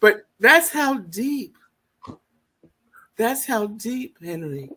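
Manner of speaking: choked up, voice catching, fighting tears. Telling Henry how his father reacted to the debut letter; choking up. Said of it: "I would keep this together".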